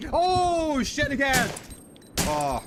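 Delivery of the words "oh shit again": frightened scream, higher and louder. Reacting to spiders jumping out in a game: scream of fright. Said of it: "Sorry I screamed".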